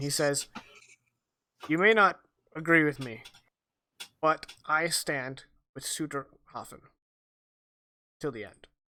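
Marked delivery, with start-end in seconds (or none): 1.7-8.6 quiet, hushed, close, kept-down voice. Voicing a character replying to a threat during a hug: hushed tone. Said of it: "replies in hushed tone".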